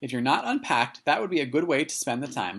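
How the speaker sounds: ordinary delivery, nothing marked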